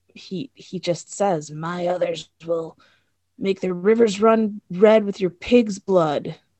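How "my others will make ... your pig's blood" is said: loud, eerie, sinister put-on creepy voice. Retelling a scene where a man on a butcher block speaks: creepy voice. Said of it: "he gets all like this creepy voice".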